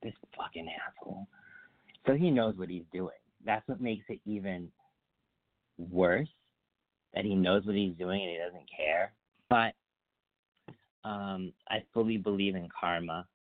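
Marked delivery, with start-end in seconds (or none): 0.0-1.3 muttered under breath, much quieter and lower. Recalling turning away and walking to the car, muttered under breath. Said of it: "And under my breath".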